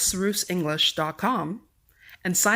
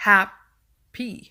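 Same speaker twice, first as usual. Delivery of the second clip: first syllable "hap" of happy leaned on; 2 semitones higher, 5 dB louder than usual. Teaching word stress with an example word, stress on hap in happy. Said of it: "we say hap with stress".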